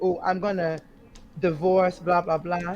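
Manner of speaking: ordinary talk, nothing marked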